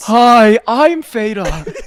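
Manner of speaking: very loud, posh eighteen-hundreds aristocrat voice. After a swap of who is who, introduce yourself with a Theta impression like an 1800s aristocrat. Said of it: "like an aristocrat from the eighteen hundreds".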